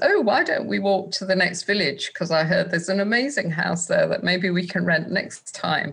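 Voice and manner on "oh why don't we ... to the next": usual speaking voice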